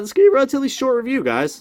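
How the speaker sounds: voice breaking into a very high squeak. Diecast reviewer talking to viewers, with a voice crack. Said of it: "Nice voice crack".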